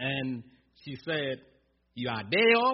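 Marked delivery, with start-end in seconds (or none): 1.9-2.7 mock indignant, loud, self-righteous, holier-than-thou tone. Retelling a woman's reply to the pastor, mock self-righteous. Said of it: "said it very self-righteously".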